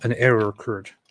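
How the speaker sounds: ordinary talk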